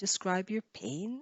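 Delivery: pitch dips down then rises on pain. Teacher showing one-syllable intonation in a question, fall-rise on pain. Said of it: "you have to go down and then up in one syllable".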